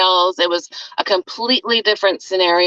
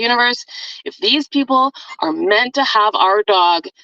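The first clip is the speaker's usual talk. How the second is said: passionate, fervent, drawn-out pleading tone. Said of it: "I could just hear the passion in your voice".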